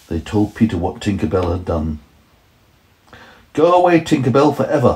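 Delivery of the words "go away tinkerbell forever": high, ringing, exclaimed outcry. Peter, told what Tinkerbell has done, cries out to her. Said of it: "Peter cried".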